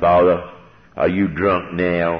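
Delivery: rough, rasping, raspy voice. Retelling the first words Juby said on the phone: imitating Juby's raspy voice. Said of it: "he's got a raspy voice".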